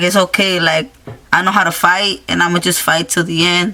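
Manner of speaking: ordinary talk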